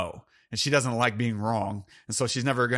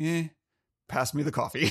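put-on offhand, indifferent, uncaring tone; 4 semitones higher than usual. Retelling a film scene where he ignores her at breakfast: imitating an uncaring, unmoved man. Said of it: "he just does not care, unmoved".

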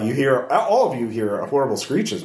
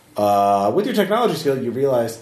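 usual speaking voice

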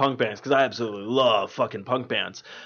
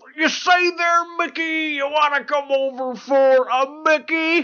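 put-on voice, pitched very high. Imagining a script reader's reaction, the speaker does a Bill Cosby bit. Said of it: "he does a lot of Bill Cosby shit".

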